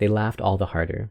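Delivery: plain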